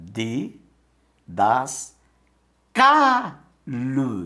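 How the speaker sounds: syllable by syllable, stress on CA.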